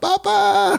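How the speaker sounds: mock voice, very high and squeaky.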